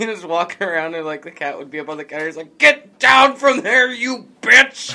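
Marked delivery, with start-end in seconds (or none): 2.6-5.0 very high, shrill, very loud screaming. Retelling a man in an old video yelling at his cats: imitating someone screaming at cats. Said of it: "screaming at his cats".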